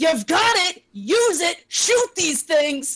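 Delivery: loud, high, drawn-out yell. Urging the boy in the game to shoot these things: yelling at him. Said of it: "I'm still gonna yell at him".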